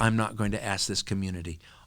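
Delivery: ordinary talk, nothing marked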